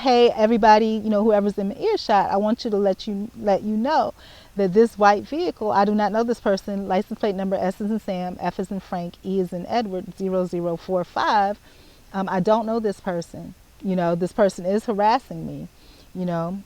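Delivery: normal talking voice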